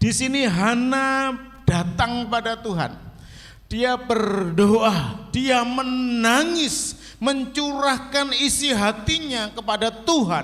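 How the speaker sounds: impassioned preaching tone.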